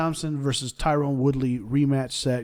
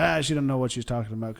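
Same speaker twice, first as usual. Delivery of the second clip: usual speaking voice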